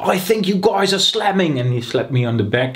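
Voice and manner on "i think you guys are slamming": put-on English accent, pitched very high. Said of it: "in his English accent he was like".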